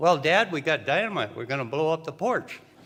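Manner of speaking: acted-out casual, offhand, matter-of-fact, nonchalant tone. Retelling how Fran answered Dad while the string was being lit, imitating a nonchalant tone. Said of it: "Fran said nonchalantly".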